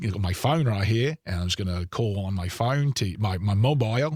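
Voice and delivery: bad put-on New Zealand accent, drifting Australian. Pressed by the others to try, the speaker does a terrible New Zealand accent. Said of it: "I do a terrible New New Zealand".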